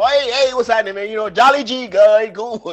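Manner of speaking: forced, upbeat, put-on cheerful energy. Showing the others a livelier greeting after being told to perk up: forced upbeat greeting. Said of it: "this sounds so much better".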